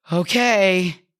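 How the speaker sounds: mock defeated, drawn-out sighing voice laced with doubt. Retelling their reply to their child in the car, with put-on doubt. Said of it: "my voice laced with doubt".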